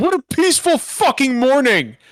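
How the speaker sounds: sudden, high-pitched, sarcastic scream. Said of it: "just me suddenly screaming".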